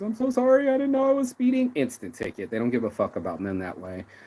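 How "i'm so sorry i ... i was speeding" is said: wailing fake sobbing, very high and loud. Pretending to cry in front of the police: mock crying. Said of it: "what if I started crying in front of the police".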